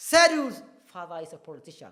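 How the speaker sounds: heavy, loudest stress on the word Sedu's. Explaining the stress word in an example sentence, with stress on Sedu's. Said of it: "the stress word there is Sedu, meaning is the loudest".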